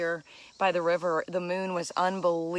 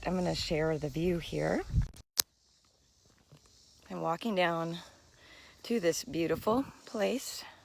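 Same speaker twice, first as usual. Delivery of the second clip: quiet, hushed voice; 4 dB quieter than usual. Vlogging from a place that requires quiet, talking quietly. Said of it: "I am talking quietly".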